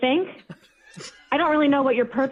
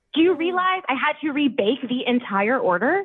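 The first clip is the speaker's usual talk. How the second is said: ordinary talk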